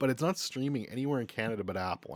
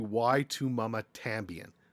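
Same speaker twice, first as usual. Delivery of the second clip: very slow, anglicized English pronunciation.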